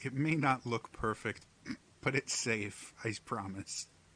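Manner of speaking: hushed, cautious, careful, soft half-whisper. Voicing the mother speaking to a player: carefully half-whispering. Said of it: "she very carefully whispers to you".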